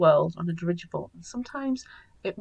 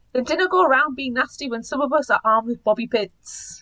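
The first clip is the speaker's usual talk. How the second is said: put-on Scottish accent, loud and high; 6 semitones higher, 7 dB louder than usual. Speaker picks out a line and reads it aloud: scottish accent. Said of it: "Scottish accent".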